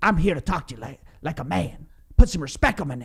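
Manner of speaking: failed, so-so angry put-on voice. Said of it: "apologies for the fail impression".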